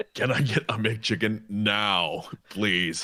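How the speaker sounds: very slow, high, creepy, drawn-out voice. Acting out a McChicken order, drifting toward Mister Creeps. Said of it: "You started getting towards Mister Creeps there".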